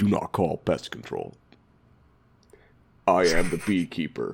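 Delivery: very deep, slow put-on voice. Retelling how he intervened at the store, in a deep put-on voice. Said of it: "I just put on this voice".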